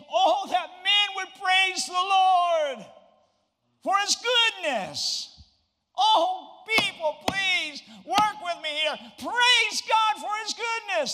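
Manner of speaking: desperate pleading, very high and very loud. Speaker voicing the psalmist's words to the listeners: acted-out begging plea. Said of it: "The psalmist is like begging".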